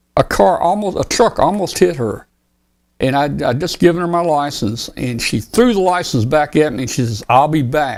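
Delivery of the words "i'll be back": put-on stern, strict voice. Retelling what a police officer said after handing back a license: imitating a stern officer. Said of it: "she said it very stern".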